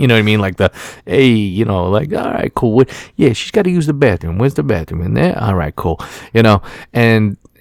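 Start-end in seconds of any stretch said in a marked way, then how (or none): 1.0-6.0 heavily laid-on fake New York Italian accent. Retelling their own talk while waiting in line, in a fake new york italian accent. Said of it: "fake Italian accent".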